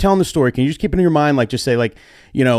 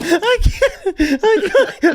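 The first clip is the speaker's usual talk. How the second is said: breaking into laughter, higher. Reacting to a story of a wedding power outage, laughing while talking. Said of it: "I tried so hard to keep a straight face".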